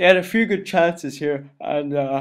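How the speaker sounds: yawning through the words. Reviewing his game half by half, yawning while talking. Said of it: "sorry, I'm yawning again".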